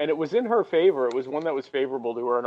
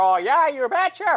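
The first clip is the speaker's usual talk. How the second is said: very high, loud, over-emphatic exclaim; 12 semitones higher, 5 dB louder than usual. Imitating Sarah Palin getting emphatic: Sarah Palin voice. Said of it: "I didn't like Sarah Palin's vo-".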